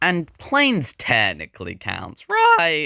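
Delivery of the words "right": very high, breaking voice crack. Showing off Pixar plushies, the speaker's voice cracks. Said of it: "another voice crack".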